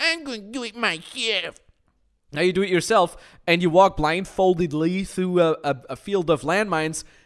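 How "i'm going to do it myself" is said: high-pitched, drawn-out cartoon voice. Mocking someone who insists on doing it alone: Cartman voice. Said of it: "you instantly sound like Cartman".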